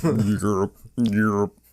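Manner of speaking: croaky, bullfrog-like "Europe", odd timbre.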